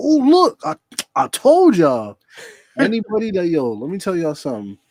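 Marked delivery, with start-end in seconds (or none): 0.0-2.2 very high, swooping pitch, overexcited, overhyped insistent delivery. Retelling how someone insisted they did nothing, imitating Naomi overhyped. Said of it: "What you so hype about?".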